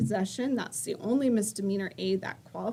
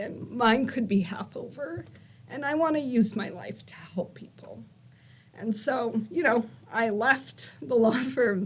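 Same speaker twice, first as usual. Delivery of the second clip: feeling rising mid-sentence, heartfelt and emotional; 2 semitones higher than usual. Explaining why they left the law firm to help people, getting emotional. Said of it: "I didn't expect to get so emotional".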